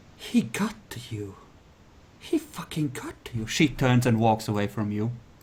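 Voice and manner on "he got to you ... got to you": very quiet whisper, quieter. Voicing a character who whispers a warning to a player: whispering very quietly. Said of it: "She whispers really quietly to you".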